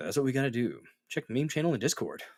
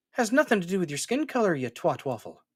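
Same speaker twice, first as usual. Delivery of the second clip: fake put-on Irish accent, pitched up; 5 semitones higher than usual. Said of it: "I don't know why I went Irish there".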